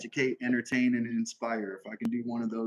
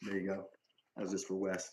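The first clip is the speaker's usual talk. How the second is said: usual speaking voice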